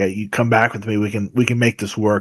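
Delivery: ordinary talk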